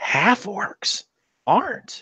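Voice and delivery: high, hushed, under-the-breath whisper. A game master voices a woman character's aside to the players, whispering. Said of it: "she kind of whispers".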